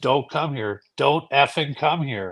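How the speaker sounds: put-on dark voice. Retelling a voice that kept warning the speaker off the house, imitating a dark voice. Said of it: "I kept getting a really dark voice saying".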